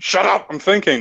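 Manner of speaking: high-pitched, intense, dismissive tone.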